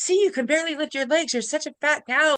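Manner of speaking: high, scolding, self-berating shout. Recalling looking in the mirror at jazzercise, retelling yelling at herself. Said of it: "And I'm yelling at myself in my head".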